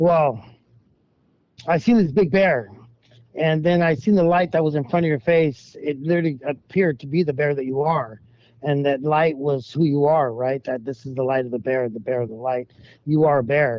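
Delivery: normal talking voice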